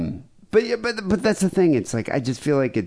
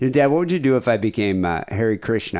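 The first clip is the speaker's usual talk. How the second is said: ordinary talk, nothing marked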